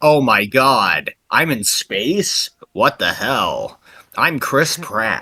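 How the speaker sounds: low, very slow delivery with every word stretched out. Joking about a future movie, doing a Chris Pratt impression.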